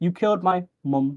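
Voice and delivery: British accent, "mum" said the British way. Showing how a character's line sounds in the uk or australian version, uk or australian accent. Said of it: "she says it like this".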